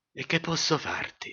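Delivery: put-on old man voice, shaky, trembling whispered murmur. An old father answers his daughter's outburst, murmuring in a trembling voice. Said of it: "Mormorava il vecchio con la sua voce tremante".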